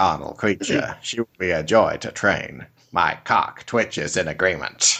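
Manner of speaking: very low, creepy reading voice. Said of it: "the creepy voice".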